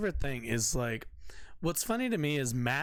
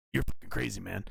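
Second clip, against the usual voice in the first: lower-pitched put-on ranting pundit voice; 6 semitones lower than usual. Imitating a commentator's reaction while mocking him: Alex Jones voice. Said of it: "I always give him the fucking Alex Jones voice".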